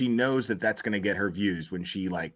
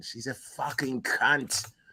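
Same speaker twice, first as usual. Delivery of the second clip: fake English accent, laid on, pitched up; 5 semitones higher than usual. Swearing the English way after saying they'll try an accent: put-on English accent. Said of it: "So I'll try to use an accent".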